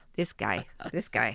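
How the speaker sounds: put-on loud Upper Midwest Wisconsin accent. Acting out Jesus shaking his head at Peter: Wisconsin accent. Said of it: "I gotta say it like from, I'm wi-, from Wisconsin".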